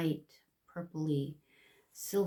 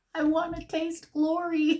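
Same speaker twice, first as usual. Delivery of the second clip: put-on screaming toddler tantrum, very high and loud; 11 semitones higher, 6 dB louder than usual. Retelling a crying girl's words, imitating a screaming child. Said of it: "She's screaming".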